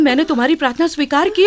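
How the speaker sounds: ordinary delivery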